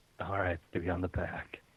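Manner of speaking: very quiet, low, hushed whisper. In a role-play scene, a character speaks to Steve about climbing on, whispering. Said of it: "He whispers".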